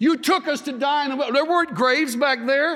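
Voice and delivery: high, mocking, sarcastic tone. Speaker retells the people's complaint to Moses; acting out a sarcastic complaint. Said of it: "You get the sarcasm?".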